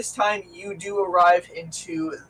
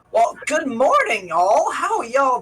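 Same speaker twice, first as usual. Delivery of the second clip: put-on, sing-song, lilting Minnesota accent; 6 semitones higher, 4 dB louder than usual. Paul arrives at the door and greets everyone: Paul's Minnesota accent. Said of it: "what accent are we gonna get for Paul today".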